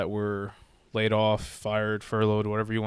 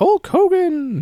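very high, booming, loud announcer call; 9 dB louder than usual. Showing how an announcer introduced wrestlers to the ring: Howard Finkel announcer voice. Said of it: "kinda speak like that when, uh, people come out to the ring".

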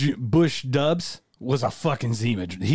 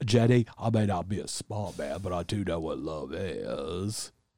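very low, slow drawl, "is" stretched out; 8 semitones lower, 6 dB quieter than usual. Quoting lines from a film to another speaker: Forrest Gump accent. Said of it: "on point today with those fucking accents".

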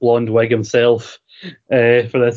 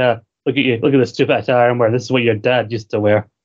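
fast, ridiculing, mocking taunt. Speaker acts out another man taunting someone about his father's old outfit, retelling a mocking tone. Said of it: "Seth kind of mocking".

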